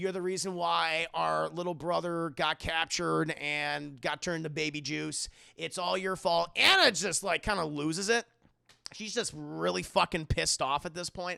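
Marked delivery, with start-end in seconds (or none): none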